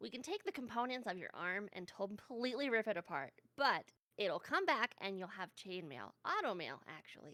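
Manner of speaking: put-on fantasy gnome voice. Asked by the others for a sample, the player speaks as their gnome, gnome voice. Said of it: "give us a little taste of your gnome voice".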